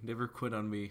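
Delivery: plain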